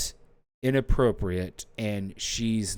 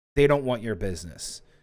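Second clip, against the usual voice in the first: ordinary delivery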